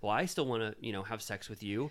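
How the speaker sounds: ordinary talk, nothing marked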